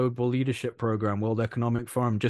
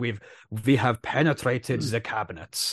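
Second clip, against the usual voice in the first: menacing, put-on German villain accent. Quoting what a man literally said, in a scary Bond villain German accent. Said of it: "scary Bond villain German accent".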